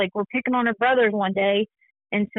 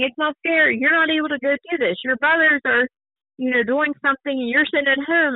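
mild, restrained, raised protesting voice; 3 semitones higher than usual. Retelling own past words to her about fairness: retelling own past yelling. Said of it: "I'd be the one yelling at her".

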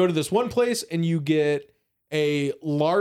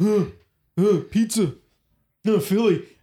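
put-on slow, drunken ape-like grunting; 3 semitones higher than usual. Imitating someone slamming two foods together: imitating someone acting like an ape. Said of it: "it was like an ape".

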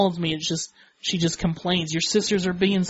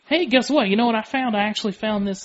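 put-on thick Southern accent, higher; 4 semitones higher than usual. Retelling the dad's phone call about a DNA test: imitating dad's thick Southern accent. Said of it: "he's a thick Southern accent".

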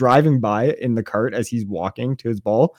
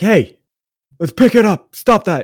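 very high, loud scolding shout, yelling; 9 semitones higher, 6 dB louder than usual. Retelling how dad walked up and yelled at the people in the river, imitating dad yelling. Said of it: "was like yelling at them like".

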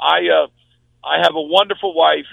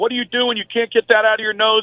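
put-on screaming voice, higher; 5 semitones higher than usual. Retelling a nurse scolding in the hospital: imitating a nurse yelling. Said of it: "started yelling and screaming at me".

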